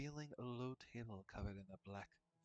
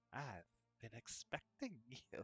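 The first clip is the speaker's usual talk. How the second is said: words broken up by wild bursts of cackling. A hunched figure peering into a crystal ball greets a visitor, cackling. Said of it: "cackling, laughing bursts like mad lightning come from her withered lips as she says".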